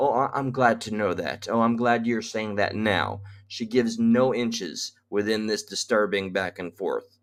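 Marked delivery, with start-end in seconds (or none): 0.0-3.2 mock condescending tone. Repeating a woman's reply he calls condescending: mocking a condescending reply. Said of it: "listen to that condescending uh, response".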